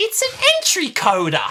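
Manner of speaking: put-on shrill, booming Australian accent, belted high and loud. Quoting a favourite scene, imitating Tegan's voice. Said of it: "Do it again".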